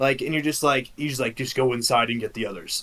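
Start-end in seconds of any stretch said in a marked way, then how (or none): 1.4-2.8 deep, low, inner-sounding voice. Voicing an old man who suddenly grows huge: deep voice heard in your head. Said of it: "just in a deep voice that you hear in your head".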